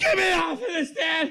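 imitated screaming. Retelling riding on his dad's lap during wheelies, retelling a scream. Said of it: "screaming at the top of my lungs".

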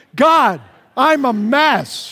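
very slow, loud, swooping, excited, earnest delivery. Leading listeners in saying the prayer together again: with enthusiasm, like you mean it. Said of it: "let's say it with enthusiasm".

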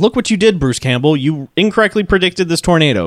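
usual speaking voice

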